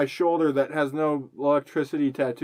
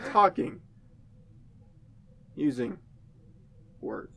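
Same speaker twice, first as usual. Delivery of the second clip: halting speech with dramatic pauses, quieter; 7 dB quieter than usual. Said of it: "Channeling Shatner".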